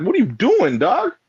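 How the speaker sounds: angry tone. Retelling what was said to the man after getting angry: retelling angry words. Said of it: "I was mad 'cause".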